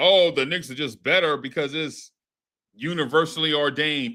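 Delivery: plain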